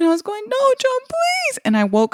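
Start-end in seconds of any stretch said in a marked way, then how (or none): 0.5-1.6 put-on, very high, tearful sobbing, pleading tone. Retelling own words in a dream of someone dying: imitating own sobbing plea. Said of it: "I was sobbing in my sleep".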